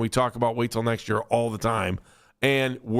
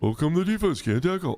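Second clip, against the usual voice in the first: goofy little cartoon voice; 4 semitones higher than usual. Mocking what everybody says about the defense, in a Barney-like little voice. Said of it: "I love that little voice you do. It sounds like Barney".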